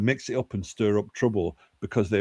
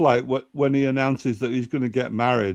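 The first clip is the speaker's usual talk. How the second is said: ordinary delivery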